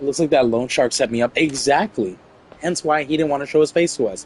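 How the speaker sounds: ordinary talk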